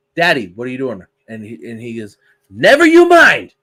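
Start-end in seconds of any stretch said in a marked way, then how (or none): 2.5-3.4 put-on thick old-country accent, very high and loud. A child asks Dad what he's doing; retelling his reply in a thick accent. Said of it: "in his thick accent".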